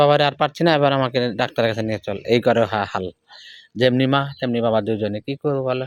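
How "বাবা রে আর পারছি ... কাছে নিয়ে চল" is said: normal talking voice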